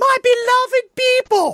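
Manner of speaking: very high, loud, grand regal proclaiming voice. Retelling an actor reading the Queen's scene, doing it as Carol Burnett. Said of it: "he does it as Carol Burnett doing like".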